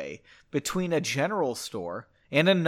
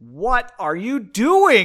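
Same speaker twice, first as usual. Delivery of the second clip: very loud, exasperated, frustrated outburst; 6 semitones higher, 8 dB louder than usual. Interrupting her companion mid-explanation, she cries out: exclaiming in frustration. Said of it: "Margot exclaimed, putting her hands up in frustration".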